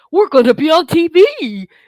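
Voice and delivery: high, loud, slow belted delivery. Retelling how a line was delivered on set: Goofy voice. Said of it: "like Goofy on, on, you know, Goofy".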